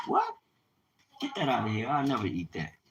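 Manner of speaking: put-on Italian teenager's accent, fast and swooping. Retelling an Italian teenager's reaction, put-on Italian accent. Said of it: "You know the way they, they accents are".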